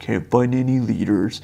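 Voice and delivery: slow, mopey, downcast, gloomy put-on voice, drawn out. Imitating how people gripe about church leaders: put-on gloomy Eeyore voice. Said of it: "It's like with the Eeyore voice".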